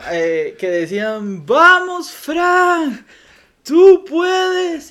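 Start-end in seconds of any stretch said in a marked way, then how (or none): 1.5-4.9 put-on very slow, raised, rousing cheer, Fran drawn out. Retelling how the townspeople urged a runner on: imitating encouraging cheers. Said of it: "voces de ánimo".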